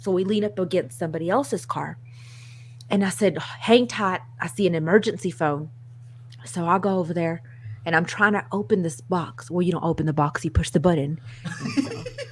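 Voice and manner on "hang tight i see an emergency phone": ordinary delivery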